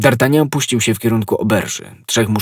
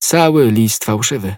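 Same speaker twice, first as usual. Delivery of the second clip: ordinary delivery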